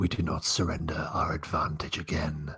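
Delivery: whispered put-on character voice. A narrator voices Vasco speaking to the others, Vasco whispering. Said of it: "Vasco whispers".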